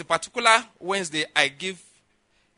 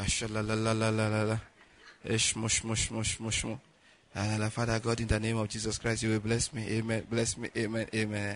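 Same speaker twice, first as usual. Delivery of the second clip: low, soft, lazy mumbled prayer. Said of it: "go lie down somewhere".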